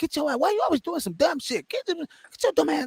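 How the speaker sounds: very high, scolding motherly voice. Imitating his mom scolding him for doing something dumb: imitating mom scolding him. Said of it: "She gonna talk shit to me".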